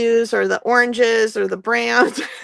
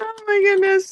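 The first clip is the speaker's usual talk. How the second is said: very high, loud, laughing through the words; 9 semitones higher than usual. Reacting after accidentally disconnecting the camera: laughing loudly while talking. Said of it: "I'm laughing very loud in your".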